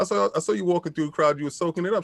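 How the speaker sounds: ordinary delivery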